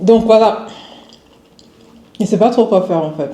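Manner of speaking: speaking while chewing, mouth full of food. Eating a cookie, she keeps talking with her mouth full. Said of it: "Désolée, je parle la bouche pleine".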